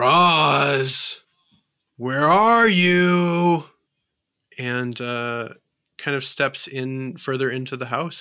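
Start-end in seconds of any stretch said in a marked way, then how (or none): 0.0-3.6 loud, very slow, unearthly voice stretching the words. Narrator voicing a large figure stepping into the house, not-quite-human voice. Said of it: "you hear a voice that sounds not quite human".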